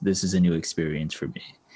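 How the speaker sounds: low, flat deadpan, no reaction at all. Speaker retells the listener's childhood reply to a teacher, in a deadpan voice. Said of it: "say in a deadpan voice".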